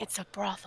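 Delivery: hushed, barely voiced whisper, very close. Voicing a character covering a nine-year-old's ears: whispering. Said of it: "Hawk puts his hands over Patience's ears and whispers".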